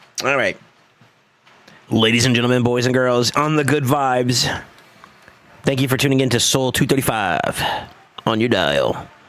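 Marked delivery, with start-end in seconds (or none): 1.9-9.1 radio DJ announcer voice, on-air host style. Opening a mock broadcast for the others: radio announcer voice. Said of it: "I have a good radio voice".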